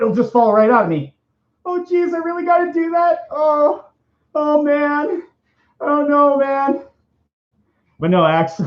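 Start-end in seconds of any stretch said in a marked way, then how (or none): 0.0-6.8 very high, fretting put-on cartoon kid voice. Acting out a cartoon scene alone: Morty impression. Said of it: "I do like to do an okay impression of Morty".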